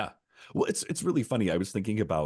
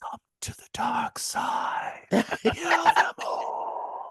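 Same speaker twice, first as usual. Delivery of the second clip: very slow, eerie, creepy vampire voice. Joking about the secret voice that vampires hear; secret vampire voice. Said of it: "a secret like vampire voice that's like".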